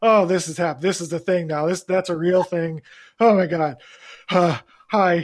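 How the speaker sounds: panicked, reliving-panic tone, acted out. Recounting being asked for money in the city, acting out own past panic. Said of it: "like I had like full on panic".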